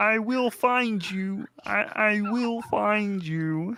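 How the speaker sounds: very high-pitched frog puppet voice. Recalling a Family Guy bit for the others, Kermit the Frog impression. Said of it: "Remember the Kermit impression of the".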